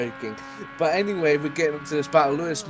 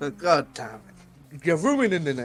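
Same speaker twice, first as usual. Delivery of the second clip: ordinary talk, nothing marked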